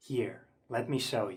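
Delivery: whispering. Introducing a noise-activated effect on video, the host whispers. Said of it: "I'm whispering".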